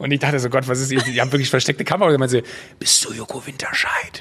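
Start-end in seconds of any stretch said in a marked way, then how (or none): 2.8-4.2 slow, hushed whisper. Retelling asking a woman browsing beside the speaker a question, whispered. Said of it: "girl whispers question in shop, performed".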